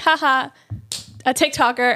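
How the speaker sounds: ordinary talk, nothing marked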